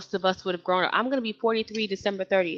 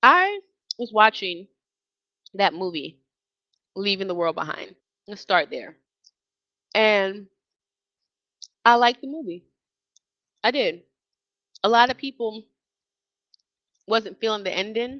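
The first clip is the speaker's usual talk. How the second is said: speaking while chewing, mouth full. Host chatting to listeners about a movie while eating, talking while chewing. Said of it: "I'm sorry if I'm chewing in your ear".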